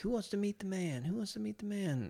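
put-on very high-pitched Southern accent. Recalling a man from Louisiana calling out, imitating his Southern accent. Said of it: "he had like Southern accent".

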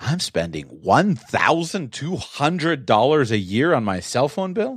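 emotional, drawn out. Showing how to restate a yearly cost out loud: emotional tone of voice. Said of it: "emotion into the tone of voice".

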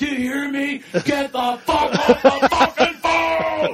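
very loud, shrill, high-pitched, drawn-out scream. Retelling a phone caller who screamed at him: imitating someone screaming. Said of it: "He screams it so loud".

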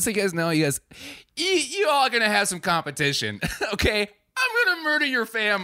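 put-on very high sing-song taunting, swooping upward. Retelling how one girl threatened the guys with competition, imitating a girl's raised voice. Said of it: "it doesn't make it playful because you raise your voice".

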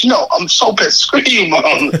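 mock nasty, spiteful tone. Retelling how Burke reacts to Mom's mistake: imitating someone being mean. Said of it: "he just gets so mean".

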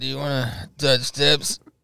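mock sloppy, slurred drunken voice. Retelling what the speaker drunkenly asked a man, acting drunk. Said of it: "I look over him like all drunkenly".

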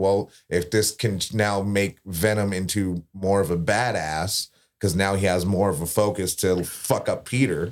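ordinary delivery

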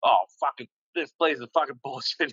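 put-on fuming, furious rant. Retelling what was said on the boat to his buddy, acting out someone fuming. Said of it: "he's just fucking fuming".

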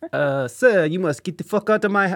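bad, clumsy, put-on French accent. Trying out accents mid-conversation, the speaker does a put-on French accent. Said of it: "I'm doing a French accent".

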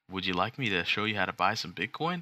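pushy used car salesman voice. Showing how he would usually offer to help: used car salesman voice. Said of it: "a used car salesman voice".

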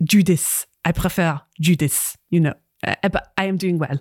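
heavily laid-on, put-on French accent. Role-player voicing the newly arrived NPC Judith Crichton: Judith Crichton French accent. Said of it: "There's your French accent".

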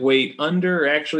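ordinary delivery

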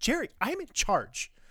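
play-acted, very high, half-begging, insistent pleading. Retelling a scene where Carter answers Jerry: imitating Carter pleading. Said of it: "the almost, like, pleading way that Carter responds".

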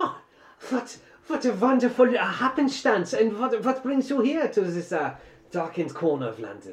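put-on very high, shrill, loud young man's voice, German accent. A narrator voices a young german man greeting an acquaintance, german accent. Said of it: "it is the uh, young German man that you had found on the train ... ja".

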